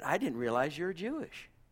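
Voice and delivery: play-acted, soft, playful teasing tone. Speaker recalls kidding back with a man who kept praising Peter, retelling a teasing jab. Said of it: "I was kidding back with him".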